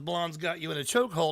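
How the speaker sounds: plain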